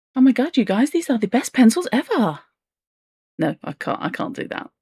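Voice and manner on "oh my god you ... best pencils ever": fake enthusiasm, much higher and faster. Mocking the overexcited tone of sponsored content, fake enthusiasm. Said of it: "the faux enthusiasm of".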